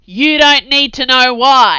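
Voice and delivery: abrupt, sudden, very loud bellowing roar. Sarge, refusing to explain his orders, lets out a sudden bellow. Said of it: "he added in a sudden bellow".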